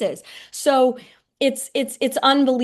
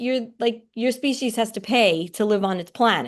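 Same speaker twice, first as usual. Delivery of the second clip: normal talking voice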